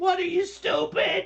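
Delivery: exasperated, very high, very loud shrill yell. Retelling reactions while reading a book: imitating himself yelling. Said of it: "yelling at the book".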